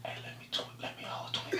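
very quiet, breathy whisper, close to the ear. Showing the others how to whisper in a girl's ear: whispering in someone's ear. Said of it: "I'm gonna whisper in their ear like this".

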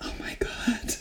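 barely audible, breathy, very quiet whisper. Retelling how Megan clutched her chest, imitating Megan whispering. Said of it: "she starts whispering".

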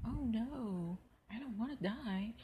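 very slow, high, badly acted sarcastic drawl. Mimicking how an actress delivered her line in a movie, mock-sarcastic delivery. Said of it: "She sounded extremely sarcastic".

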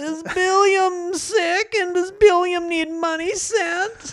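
put-on elderly man voice. Acting out a scam phone call as the one answering: put-on old man voice. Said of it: "I'm an old man".

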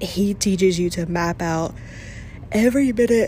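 speech pushed out during a yawn. Casual chat, the speaker apologizes mid-sentence, yawning while talking. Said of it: "sorry, I'm yawning".

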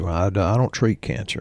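plain

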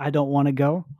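plain

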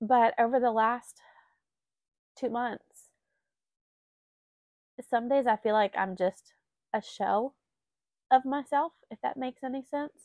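tearful voice, trying not to cry. Sharing how the last two months have felt, trying not to cry. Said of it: "I'm trying not to cry anymore".

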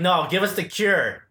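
plain

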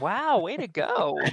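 very slow condescending tone. Acting out praise for doing the dishes: mock condescending praise. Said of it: "That sounds condescending".

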